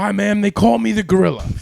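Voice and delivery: put-on yelling. Telling how a man greeted the speaker's mom, the speaker imitates him yelling. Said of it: "like almost like he's yelling at you".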